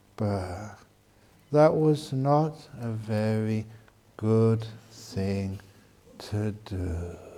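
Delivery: soothing, calm, deliberate, low, slow and soft. Explaining how to calm an angry person, the speaker demonstrates a low, slow calm voice. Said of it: "You lower your tone and speak slowly".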